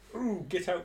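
silly character voice for a tree. Imagining how a tree talks when players go inside it: put-on tree voice. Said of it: "That's my impression of the tree. I presume that's how he talks".

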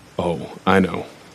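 sounding unhappy and displeased. Answering someone who admits reporting a woman, sounding unhappy. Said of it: "You don't sound happy about it".

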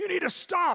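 put-on loud, high police officer yell. Retelling a police officer yelling across the room: imitating a police officer yelling. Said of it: "he's yelling at him across the room".

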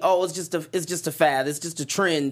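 ordinary delivery

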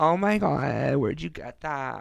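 put-on gushing Californian valley girl voice. Talking about how Californians talk, the speaker mimics the girls there: imitating Californian girls' talk. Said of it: "they talk like that".

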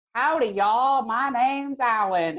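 exaggerated Texan drawl. Showing the range of the Texan accent: stereotypical Texan accent. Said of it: "the most stereotypical thing ever".

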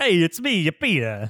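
fake Italian accent. Introducing himself on a podcast minisode, bad italian accent. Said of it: "aren't great at Italian accents".

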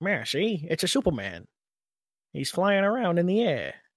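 put-on mid-Atlantic transatlantic accent. Demonstrating the accent used when reading 1940s comics aloud, transatlantic accent. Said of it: "in your transatlantic accent".

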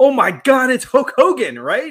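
put-on, shrill, very high, very loud joking cry. Retelling spotting a hulk hogan cosplayer while on camera, retelling a joking exclamation. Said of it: "I was jokingly said".

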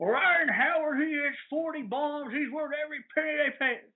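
terrible, botched fake South Jersey accent, pitched very high. Speaker mimicking south jersey callers to radio shows, in a bad south jersey accent. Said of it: "That is not a South Jersey accent at all".

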